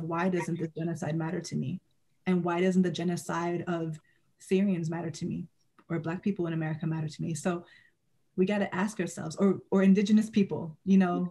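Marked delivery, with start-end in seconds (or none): none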